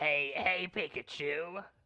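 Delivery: cartoon hero voice like a chain smoker. Speaker shows how to sound like Ash Ketchum, doing Ash Ketchum voice like a smoker. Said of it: "If you want to sound like Ash Ketchum, you have to sound like a smoker".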